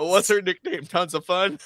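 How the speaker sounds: laughing, words breaking up with giggling. Asking another speaker about a nickname, laughing while talking. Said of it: "I can't even say it without laughing".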